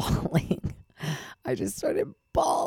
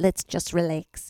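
failed, bad put-on Australian accent. Quoting a woman telling her to calm down, bad australian accent. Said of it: "she had an Australian".

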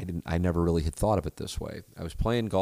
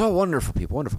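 put-on botched half-Irish accent, quick and raised; 9 semitones higher, 6 dB louder than usual. Speaker retelling the answer of a man he played golf with, in a half-Irish accent. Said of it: "like a half Irish accent for a guy who's from Australia".

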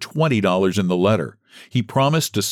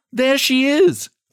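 crying out in a very high voice. A young woman near a burning house, asked where her mother is: cried out. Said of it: "cried she".

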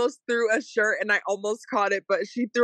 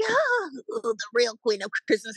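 speaking through laughter, swooping and drawn out. Speaker retells Whoopi on The View, imitating Whoopi laughing. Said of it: "she was laughing like".

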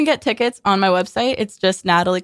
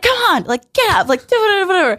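high, pushed scream. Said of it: "screaming at everybody the way I scream".

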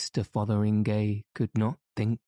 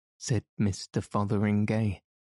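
ordinary delivery, nothing marked

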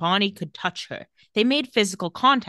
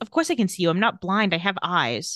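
ordinary delivery

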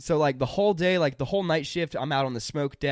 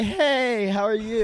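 put-on very slow, high, nervous, wobbling shaky voice; 7 semitones higher, 4 dB louder than usual. Retelling a store clerk's greeting: imitating a shaky voice. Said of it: "he was kinda, like, shaky".

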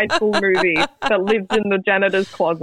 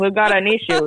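normal talking voice

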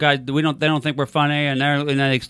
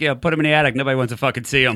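usual speaking voice

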